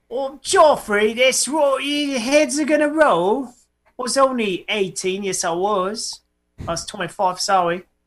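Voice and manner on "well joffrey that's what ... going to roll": put-on English accent, pitched up. Speaker urging a group to bust out accents, in a put-on english accent. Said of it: "get ready to bust out your English accents".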